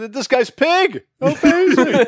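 terrible broadcaster voice, very high, loud and slow. Retelling how a broadcaster introduced a player: terrible John Madden impression. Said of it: "that's a terrible John Madden impression".

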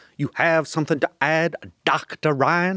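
imitated Indiana accent, sinister tone. Doing an impression of a senator's line from the movie, Hannibal Lecter-esque Indiana accent. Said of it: "You are uncanny".

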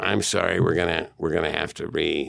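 rough-edged, creaky, stammering, halting put-on voice. Retelling times a file was lost, imitating the other speaker apologizing. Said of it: "I'm doing an impression of you".

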